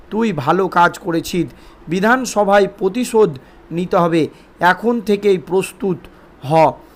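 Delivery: ordinary talk, nothing marked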